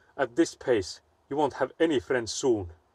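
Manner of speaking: mock serious, stern, concerned tone. The speaker retells what a man said coming out of the room, imitating a stern voice. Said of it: "he was like in a stern voice".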